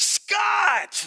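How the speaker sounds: very high, acted-out, far-off shout. Retelling hearing a man yelling a name across an arena, retelling a distant yell. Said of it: "we hear just this guy yelling".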